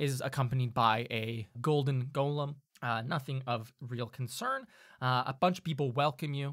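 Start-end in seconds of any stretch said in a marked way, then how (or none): none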